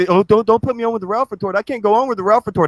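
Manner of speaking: mock-crying, put-on crying voice. Mocking the other speaker, said to have cried for weeks: mock-crying imitation. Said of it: "you've been crying for fucking three weeks".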